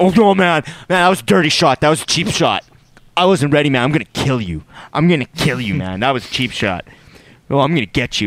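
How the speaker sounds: acted tough-guy bluster, shaken and rattled. Retelling a fight, imitating a rattled fighter acting tough. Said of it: "trying to be tough".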